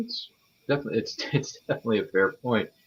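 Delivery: chuckling and laughing through the words mid-sentence. Agreeing with another speaker's point, laughing while talking. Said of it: "I don't know why I keep laughing".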